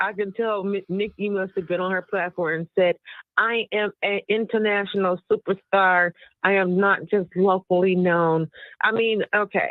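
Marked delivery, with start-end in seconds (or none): none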